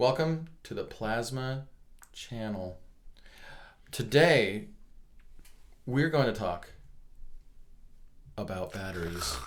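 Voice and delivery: deliberate, super slow, drawn-out delivery. Opening a channel intro about batteries, talking super slow. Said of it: "you're talking super slow".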